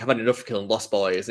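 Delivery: normal talking voice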